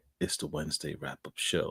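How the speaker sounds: hushed, breathy, deep bass whisper.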